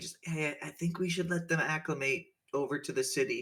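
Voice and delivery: hushed soft-spoken voice. Retelling a voice on the other end of the line, softer voice. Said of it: "a kind of softer voice".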